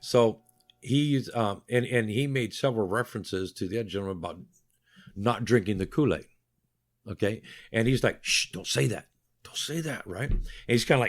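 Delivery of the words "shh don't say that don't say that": put-on hushed voice in low tones. Retelling one man hushing another about the Kool-Aid remarks: retelling a hushed warning. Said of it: "talking in low tones".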